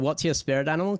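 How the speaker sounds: ordinary delivery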